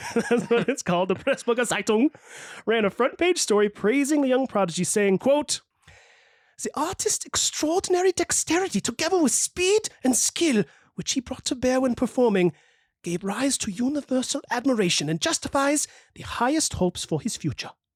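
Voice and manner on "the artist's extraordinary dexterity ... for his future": put-on German-accented reading. Host reading a newspaper quote praising a young prodigy, in a german accent. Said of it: "that's my best German accent".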